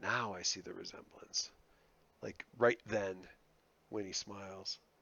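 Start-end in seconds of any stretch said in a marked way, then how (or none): 0.0-1.5 murmuring softly, lower and quieter. Voicing a character in a scene, right as another smiles: whispering.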